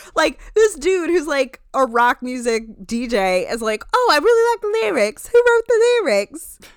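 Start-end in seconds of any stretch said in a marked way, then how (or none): 4.0-6.6 very high, loud, put-on nanny-like voice. Quoting a rock music DJ praising the lyrics: Lisa Vanderpump impression. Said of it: "I'm doing my Lisa Vanderpump impression".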